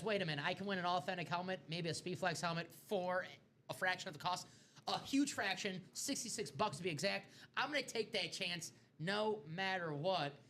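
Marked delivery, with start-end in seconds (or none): none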